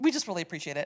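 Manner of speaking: tearful, crying through the words. Thanking others for a donation, crying while talking. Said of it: "I don't know why I'm crying".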